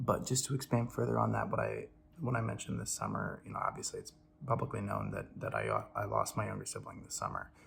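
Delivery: hushed, quiet voice. Talking to viewers while people sleep nearby: speaking quietly. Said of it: "I'm trying to be quiet".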